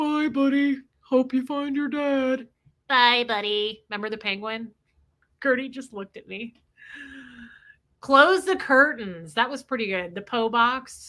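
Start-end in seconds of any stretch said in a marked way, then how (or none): 0.0-3.8 slow storybook-style narwhal character voice. Reminiscing about a scene with the group, doing the narwhal character voice. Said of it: "doing the narwhal's voice?".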